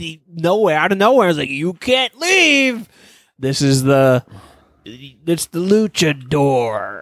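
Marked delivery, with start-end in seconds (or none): 1.5-7.0 deep, very slow, godlike disembodied voice. Retelling a scene where a voice speaks out of nowhere: voice of a higher power. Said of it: "this fucking higher power's voice comes over".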